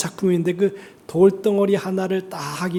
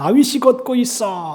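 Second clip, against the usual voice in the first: joyful, loud, excited, laughing. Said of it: "큰 소리로 웃으면서 외쳤다고 합니다".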